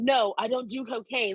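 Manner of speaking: put-on smug, self-righteous voice. Retelling turning down offers of cocaine: imitating her own self-righteous refusal. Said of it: "so self-righteous".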